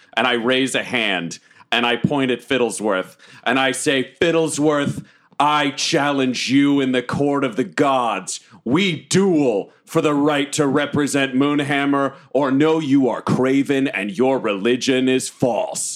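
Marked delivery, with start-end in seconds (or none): 4.1-15.9 declaimed, dramatic, heroic delivery. Challenging a rival to a duel in court: booming echoing voice. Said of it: "my voice echoes and fills the entire room".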